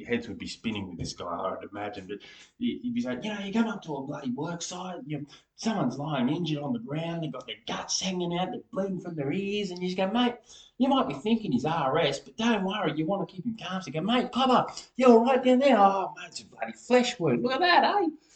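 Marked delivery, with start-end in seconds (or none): 3.2-18.1 put-on slangy, broad ocker Australian accent, pitched up. Retelling a first aid course lesson: imitating broad ocker australian instructor. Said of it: "he was as ochre as you want".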